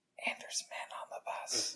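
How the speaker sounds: very quiet, barely voiced, hushed whisper. Setting up a hypothetical scenario for the other speaker: whispering. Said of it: "Why are you whispering?".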